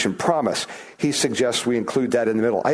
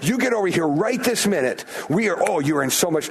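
mock-angry telling-off tone, much higher; 6 semitones higher than usual. Showing how someone might order another person over: mock-angry scolding. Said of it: "sound like that".

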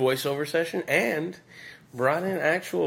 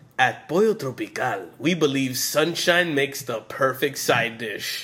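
put-on heavy Caribbean Spanish accent, laid on thick. Following instructions to use only a caribbean accent, the speaker reads a line in a caribbean spanish accent. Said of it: "It was almost too Spanish".

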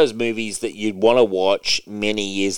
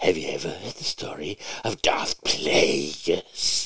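soft, breathy, sinister, creepy whisper; 5 semitones lower, 7 dB quieter than usual. Friends recalling a Star Wars scene, one quotes the villain: creepy Darth Sidious impression. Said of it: "It's just like so creepy".

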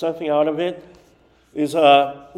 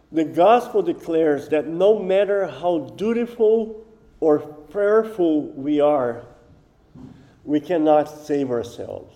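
slow, unhurried, deliberate reading, letting the words land. Speaker reads a devotional aloud to listeners; reading slowly. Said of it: "I'm going to read slow".

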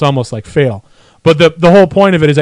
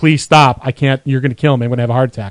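put-on begging, lower; 3 semitones lower than usual. Describing an experiment, acting out the other person pretending to be hurt, mock begging.

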